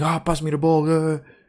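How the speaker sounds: mock petulant, demanding whine like a spoiled child. Criticizing a footballer as captain material, mimicking Saka screaming. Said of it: "He's just screaming".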